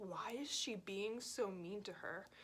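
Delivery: hushed, very quiet, barely audible half-whisper. Retelling what was said to a friend during a tense moment: imitating own quiet half-whisper. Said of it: "I say it so fucking quietly".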